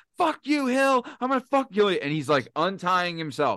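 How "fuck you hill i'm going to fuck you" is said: mock, very high, screamed. Retelling how a hogtied man threatened from the corner: imitating someone screaming.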